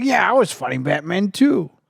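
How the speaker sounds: rough, raspy, high-pitched voice. Retell his reply while presenting an award with Arnold, in a Danny DeVito voice. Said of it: "That's your Danny DeVito voice?".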